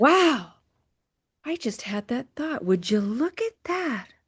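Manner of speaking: soft, breathy, playful coo. Showing how to spin a thought and make it fun, in breathy Marilyn Monroe voice. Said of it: "spin it a little bit like Marilyn Monroe. Get it breathy".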